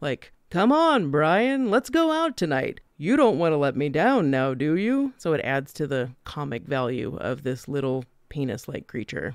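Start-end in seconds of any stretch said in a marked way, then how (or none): 0.5-5.1 animated, swooping, salesy radio-host patter. Describing a film creature urging Brian to go out, doing Elmer's radio-host voice. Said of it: "very much like a radio host".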